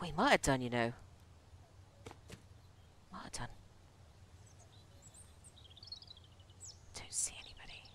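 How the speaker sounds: quiet whisper. Commentating a game while looking around for loot, whispering. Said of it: "I don't know why I'm whispering".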